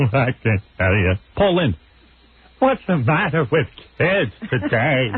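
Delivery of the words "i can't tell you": put-on timid, cowardly lion voice. Mocking a crying man's interview answer: Cowardly Lion voice. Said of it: "He's like the cowardly lion".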